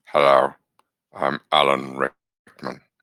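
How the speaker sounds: slow, deep, tired, dragged-out drawl. Speaker says their tired voice sounds like Alan Rickman: Alan Rickman voice. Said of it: "it does sound like Alan Rickman when I am tired in my voice".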